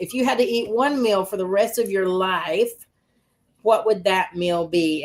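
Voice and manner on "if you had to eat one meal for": usual speaking voice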